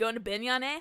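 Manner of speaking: put-on Canadian-sounding accent. Quoting a game character's line to another speaker: Canadian-sounding accent. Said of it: "What, are you Canadian?".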